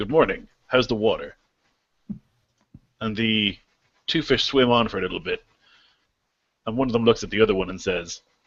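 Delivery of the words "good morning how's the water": plain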